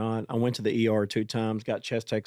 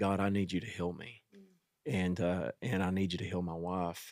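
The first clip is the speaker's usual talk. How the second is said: put-on emotional delivery, quieter; 3 semitones lower, 7 dB quieter than usual. Speaker recounts praying for healing for himself and his wife, retelling an emotional prayer. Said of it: "very emotional and just praying to God".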